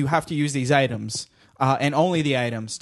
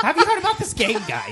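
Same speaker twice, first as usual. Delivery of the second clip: very high, vaguely New York voice. Asking the others about a board game: Jay Leno impression. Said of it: "This is my Jay Leno impression".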